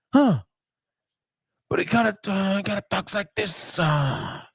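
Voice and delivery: put-on raspy voice, pitched high and hushed.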